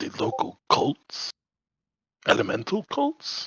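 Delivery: speaking quietly. Asking another character a question while in character: lowered voice. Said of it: "lowering my voice".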